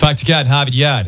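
put-on Boston accent. Asked how to do Mark Wahlberg in the Boston accent, attempted Mark Wahlberg impression. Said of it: "How do you do Mark Wahlberg in the Boston accent?".

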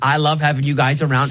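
ordinary delivery

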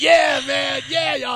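hyped, pumped-up excited delivery.

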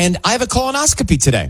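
high, fast, mock excitement.

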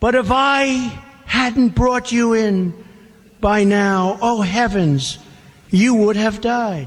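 ordinary talk

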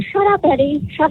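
half-hearted mild yell. A listener retells yelling at a radio host while listening, retelling yelling at radio. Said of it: "I'm like yelling at my radio".

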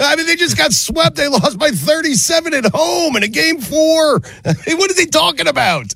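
high, incredulous laughing talk.

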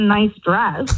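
mock snide bitchy tone with a chuckle. Retelling how the boyfriend's sister looked her up and down: imitating a bitchy tone with a chuckle. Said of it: "really bitchy way with, like, a chuckle".

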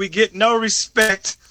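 plain

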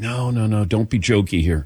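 ordinary delivery

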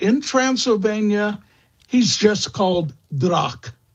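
ordinary talk

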